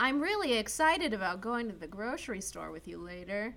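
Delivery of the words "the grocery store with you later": ordinary talk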